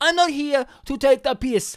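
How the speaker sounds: put-on French accent. Imagining a criminal speaking up at the meeting: French accent. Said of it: "that's how he speaks with a French accent".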